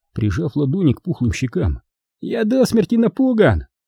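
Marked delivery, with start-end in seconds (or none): 2.2-3.7 very high-pitched, taunting, sneering mock terror. One man taunts another who warned him against insults, mocking. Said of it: "с издевкой произнес Браун".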